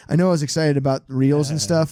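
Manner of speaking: usual speaking voice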